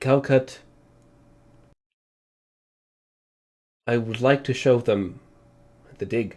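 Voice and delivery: low, serious, very clearly spoken. Voicing a character addressing Calcut, in a low, clear, serious tone. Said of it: "in a very like low, clear, and serious tone".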